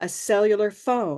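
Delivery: heaviest stress on phone. Explaining how cellular phone became cell phone, stress on phone. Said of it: "It was a cellular phone where the phone gets the stress".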